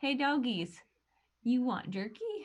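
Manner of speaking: coaxing, cajoling, sweet-talking voice. Speaking in character to the dogs, offering jerky: in character coaxing dogs. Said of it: "I'll be like".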